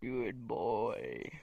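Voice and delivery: low, hushed, sultry, seductive delivery. Speaker demonstrates how they could say a phrase, in a seductive voice.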